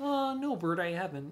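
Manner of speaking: put-on high-pitched children's puppet voice. Voicing both puppets in a quick skit, answering Bert in an Ernie voice.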